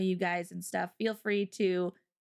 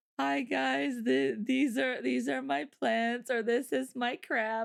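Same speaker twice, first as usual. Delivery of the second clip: put-on sheepish, shy voice, higher; 4 semitones higher than usual. Describing someone walking forward to share their stuff, imitating a sheepish speaker. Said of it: "they just like sheepishly walks forward".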